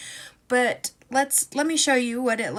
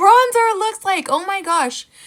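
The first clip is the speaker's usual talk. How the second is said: shrieking at full volume, very high and very loud scream; 9 semitones higher, 10 dB louder than usual. Showing what the bronzer looks like on camera: screaming. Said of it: "Sorry for screaming".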